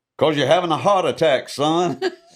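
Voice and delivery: big booming prophet-like voice. Retelling a doctor telling the patient why he hurts: imitating Doctor Catchings' booming voice. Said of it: "I heard this voice sound like Moses".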